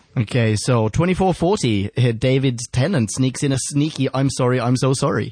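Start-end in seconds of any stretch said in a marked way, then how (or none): none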